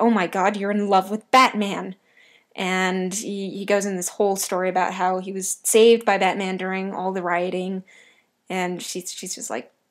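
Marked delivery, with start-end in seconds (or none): 0.0-2.0 put-on indignation, louder. Recapping an episode where a girl mentions Batman; Terry's indignant outburst, retold. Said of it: "He gets all indignant".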